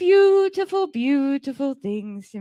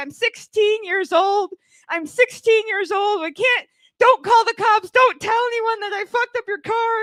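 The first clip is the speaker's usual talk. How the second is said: put-on high, tearful, sobbing, begging teenager voice; 7 semitones higher than usual. Retelling how a sixteen-year-old who damaged his car begged him, imitating her sobbing. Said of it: "I felt terrible because she is sobbing".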